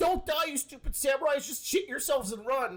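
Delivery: put-on blubbering, crying shout, high-pitched. Imitating a cartoon character crying and yelling at samurai: imitating Usopp crying and yelling. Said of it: "crying all of Onigashima, yelling like".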